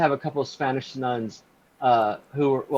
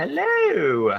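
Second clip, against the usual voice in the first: put-on pitched-up old lady voice; 6 semitones higher than usual. Welcoming a listener who just joined the stream: Dame Edna voice. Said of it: "That's my Dame Edna voice".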